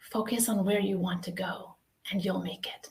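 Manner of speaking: soft, hushed half-whisper kept quiet. Telling of learning to ride a bike, speaker retells the grandfather's words, retelling a half-whisper. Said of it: "he whispers".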